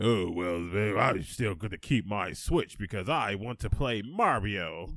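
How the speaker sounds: dumb-sounding put-on voice. Mocking Switch owners who shrug off the news, in a mocking stupid voice. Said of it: "make the stupidest sound possible".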